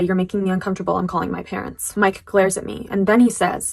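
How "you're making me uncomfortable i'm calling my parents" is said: normal talking voice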